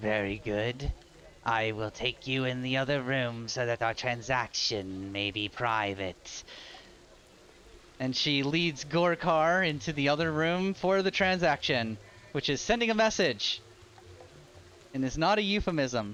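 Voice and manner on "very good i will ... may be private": very low, hushed, hissing reptile voice. Voicing a lizard character agreeing to a private transaction: hissing lizard voice. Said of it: "she hisses and says".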